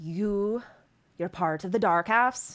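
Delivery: voice brought down to a hush. Voicing the stone giant's reply, in a lowered voice. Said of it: "he lowers his voice and goes".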